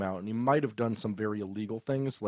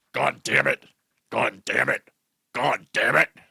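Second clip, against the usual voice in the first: very loud, rough, growly roar; 9 dB louder than usual. Acting out a scene with a board representative: growly Vince McMahon voice. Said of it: "get into a Vince McMahon".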